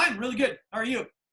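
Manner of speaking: put-on fast, rattled-off kid chatter, words tumbling out. Retelling a kid answering Boyd's greeting, imitating Wolfie's fast talking. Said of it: "Wolfie talked really fast".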